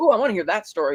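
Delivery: normal talking voice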